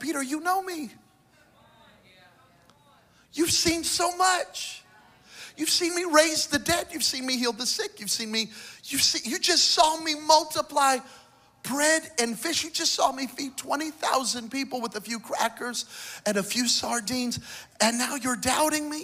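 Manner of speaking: very high voice, full of feeling. The speaker retells Jesus speaking to Peter after Peter doubted: acting out Jesus, emotional. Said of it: "I can hear the emotion in Jesus' voice".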